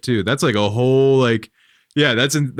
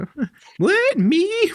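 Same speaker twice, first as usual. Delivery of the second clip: put-on woman's voice, higher pitch. Voicing the wife in a made-up book chapter: put-on lady's voice. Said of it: "You can do a lady's voice, right?".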